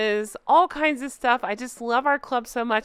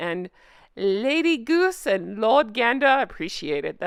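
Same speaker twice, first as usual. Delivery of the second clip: put-on slow, posh, tipsy goose voice. Streamer thanking viewers on a video game channel, fancy drunk goose voice. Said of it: "That's my fancy drunk goose voice".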